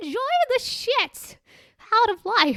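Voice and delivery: put-on elderly woman voice, very high and slow. Leaving a tip for the dating world: old lady voice. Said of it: "I'm going to do it in my old lady voice".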